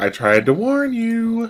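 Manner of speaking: hushed whispering voice. During a roleplaying game, a player whispers in character to another character. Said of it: "I'm gonna whisper to uh, Bear".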